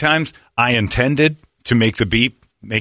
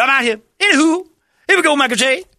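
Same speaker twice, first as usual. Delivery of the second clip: sing-song voice, very high, swooping; 3 dB louder than usual. Mocking a lazy impression on a sketch show: imitating Kenan Thompson as O J Simpson. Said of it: "That was his impression of, of, uh, O J Simpson".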